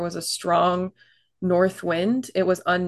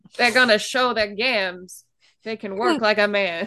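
put-on old-time radio mid-Atlantic accent; 3 semitones higher than usual. Describing 1920s stewardesses, in a mid-atlantic accent. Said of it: "Here we go with the mid-Atlantic accent again".

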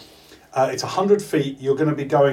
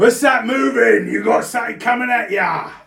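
shouting giant voice, higher; 9 semitones higher than usual. Voicing a giant on top who shouts down: giant shouting down. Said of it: "the top there shouts down".

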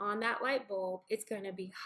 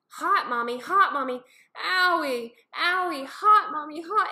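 mock very loud, high, drawn-out toddler crying; 7 semitones higher, 12 dB louder than usual. Mother recounts her kids touching a hot light bulb, imitating a hurt crying child. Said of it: "And then they just start crying".

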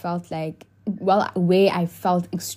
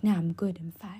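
mock-harsh, put-on harsh tone of voice; 7 dB quieter than usual. Retelling how the speaker answered him: retelling a harsh reply. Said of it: "I say it in a harsh way".

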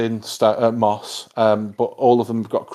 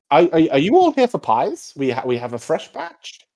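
put-on higher-pitched elderly woman character voice; 6 semitones higher than usual. In an acted scene, speaking as an old woman character, old woman voice. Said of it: "you hear this old woman like coming down the stairs".

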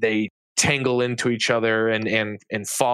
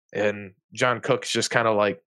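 ordinary talk, nothing marked

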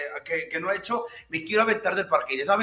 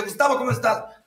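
high-pitched, loud, deliberate shout; 6 semitones higher than usual. Retelling how the speaker called out to a neighbor, retelling a deliberate shout. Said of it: "Hasta le grité intencionalmente".

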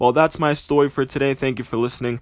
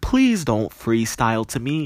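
plain

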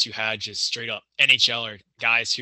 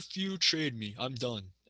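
English in a soft, put-on Swedish accent; 2 semitones higher, 9 dB quieter than usual. Quoting a player who went back to Sweden: put-on Swedish accent. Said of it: "he said in his Swedish accent".

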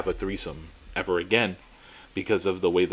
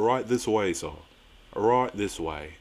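put-on English accent in a doorman voice; 4 dB quieter than usual. Quoting a doorman leading the way to the penthouse, imitated English accent. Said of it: "let's just pretend that the doorman had like an English accent".

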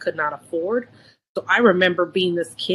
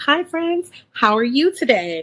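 friendly voice, switching language; 7 semitones higher than usual. Showing how she sounded when code switching at work: imitating own corporate Disney voice. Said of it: "my corporate or my Disney voice".

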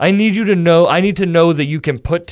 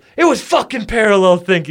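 mock angry, irritated, pissed-off voice; 4 semitones higher than usual. Retelling another man's reply after being told about a similar joke, mock-angry retelling. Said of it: "He got all mad and, like, pissed off".

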